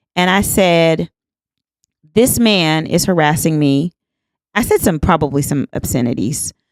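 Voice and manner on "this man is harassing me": usual speaking voice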